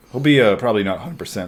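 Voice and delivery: voice cracking and breaking. Podcast host predicting a player's condition for the series, voice cracking. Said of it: "so I just voice cracked there".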